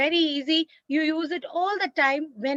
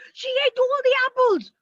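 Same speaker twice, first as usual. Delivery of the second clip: high, loud, bursting-with-excitement outburst; 8 semitones higher, 5 dB louder than usual. Showing learners how to read a sentence with an exclamation mark: excited exclamation.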